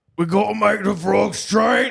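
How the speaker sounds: high, loud, raspy East London bellow. Doing an impression that mixes two people, in an Elon Musk–Alex Jones mashup voice. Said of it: "That's Alex Jones and Elon Musk mixed together, but it's Elon from uh, East London".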